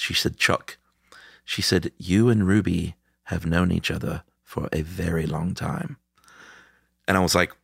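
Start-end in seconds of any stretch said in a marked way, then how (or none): 2.0-6.0 imitated, mock posh accent. Retelling what a woman reading their chart said, imitating a posh accent. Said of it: "She has this sort of posh accent".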